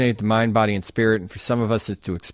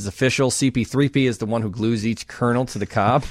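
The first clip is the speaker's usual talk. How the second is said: ordinary delivery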